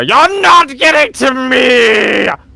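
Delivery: very high shrill crazed cry, echoing, "me" drawn out. Narrating travelers going down a ravine, voicing someone heard through the trees, crazed voice. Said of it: "in a rather crazed voice that echoes".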